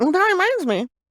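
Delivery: mocking voice, pitched way up.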